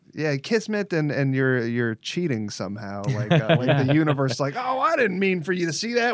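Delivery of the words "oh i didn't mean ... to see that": put-on Old West character voice, higher and louder. Voicing the universe as a Wild West townsperson: Wild West townsperson voice. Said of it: "Why is the universe like, a Wild West town?".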